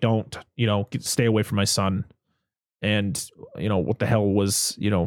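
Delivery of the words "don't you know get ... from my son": ordinary delivery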